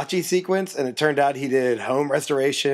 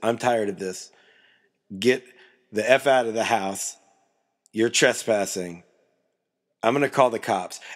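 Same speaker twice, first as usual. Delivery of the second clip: flat, blank, emotionless menace with no feeling; 3 semitones lower than usual. Retelling a man ordering visitors out of his house: imitating a blank, emotionless threat. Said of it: "it was just blank. No emotion".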